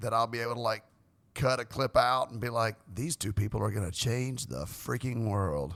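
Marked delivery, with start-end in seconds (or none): 2.9-5.7 deep movie-trailer narrator announcer voice. Speaker imagines cutting a clip from the recorded meeting, in a movie announcer voice. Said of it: "That was a good uh, movie announcer voice".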